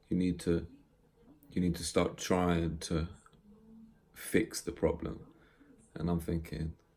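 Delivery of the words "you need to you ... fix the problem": ordinary delivery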